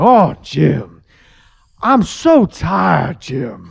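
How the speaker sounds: very deep, very slow, swooping drawn-out voice. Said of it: "all of a sudden everything got real deep".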